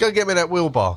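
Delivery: loud, high-pitched holler. Retelling a moment at the build site: imitating Amos hollering. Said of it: "he hollers".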